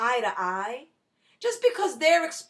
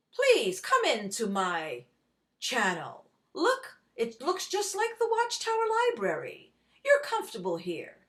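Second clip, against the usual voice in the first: play-acted gentle, reassuring, calm, soothing tone; 3 semitones lower than usual. Speaker mocking a YouTuber who lives off donations, mock-calm voice. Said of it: "Listen to my calm voice".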